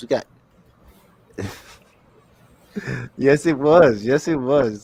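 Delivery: loud, talking through the laughter. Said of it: "I'm laughing at some of the comments".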